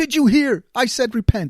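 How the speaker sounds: play-acted high, loud scream, words repeated. Retelling how Gina screamed out loud at the repent billboards: imitating Gina screaming. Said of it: "Gina just screams out loud".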